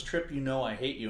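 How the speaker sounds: ordinary talk, nothing marked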